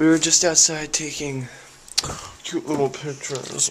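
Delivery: winded, breathless, panting between words. Just back from taking pictures outside, the speaker talks out of breath. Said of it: "I'm so out of breath".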